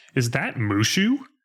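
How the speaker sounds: usual speaking voice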